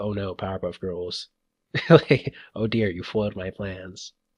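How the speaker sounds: bored, nonchalant, dry deadpan, low and flat. Recalling a favorite cartoon scene to the other speaker, doing a dry Mojo impression. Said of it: "loved the dry acting on Mojo".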